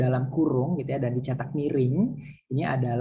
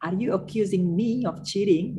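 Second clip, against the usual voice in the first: heavy stress on me, rest even; 7 semitones higher than usual. Explaining that italic text marks emphasis in a sentence: stress on me. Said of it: "Jadi me-nya itu ditekankan".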